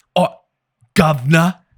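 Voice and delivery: loud, high fake British accent, drawled out. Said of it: "I took it to a British accent".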